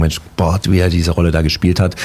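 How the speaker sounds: ordinary talk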